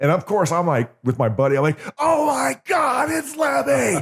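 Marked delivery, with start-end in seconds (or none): 2.0-4.0 put-on excited screaming, higher pitch. Retelling seeing a surprise guest walk onstage: retelling own excited screaming. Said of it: "I'm screaming".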